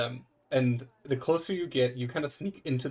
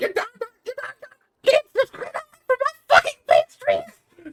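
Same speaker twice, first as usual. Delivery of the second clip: put-on shrill, very high, very loud old-woman hollering; 10 dB louder than usual. Voicing an old woman with a broom at a window: old woman yelling. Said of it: "just starts yelling at the three of you".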